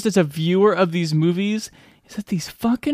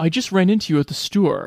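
botched put-on American accent. Mocking an actor's trouble with American vowels: Jamie Dornan's botched American vowels. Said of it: "does he have trouble with his American vowels".

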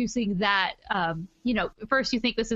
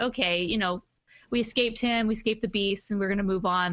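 ordinary talk, nothing marked

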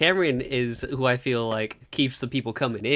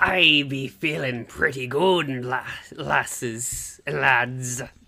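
hearty put-on pirate voice. Guest answers the podcast host's welcome back, pirate voice. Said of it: "work up my pirate voice".

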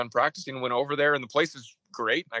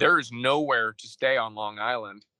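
ordinary delivery

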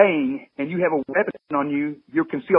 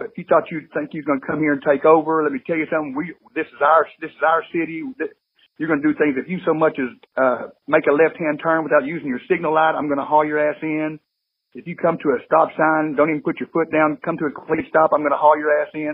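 ordinary talk

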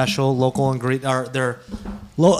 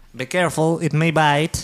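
cartoon villain-style voice; 3 semitones higher than usual. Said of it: "you sound like the Groove from Despicable Me".

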